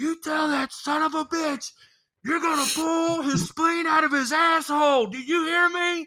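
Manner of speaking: put-on, very high, shrill screaming. Retelling an angry phone call, imitating Stu screaming from another room. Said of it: "Stu start screaming from the other room".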